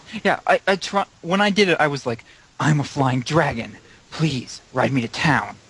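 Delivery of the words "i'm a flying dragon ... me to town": commanding, villainous, charismatic, demanding, evil voice. Retelling own dragon line from a recording: evil, demanding, charismatic voice. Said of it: "in an evil, demanding, charismatic voice".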